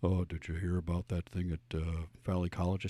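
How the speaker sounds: casual, everyday way of talking. Retelling a talk with a son while preparing the show: imitating his son Max. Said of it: "here's how he talks".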